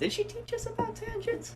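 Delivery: pitch jumping up high. Asking the others a question, voice going really high. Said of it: "my voice went really high there".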